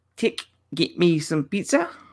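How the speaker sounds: clumsy, bad New Zealand accent, slow pace. Trying out a line for the others in a bad New Zealand accent. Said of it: "in a New Zealand accent".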